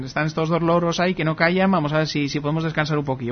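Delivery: plain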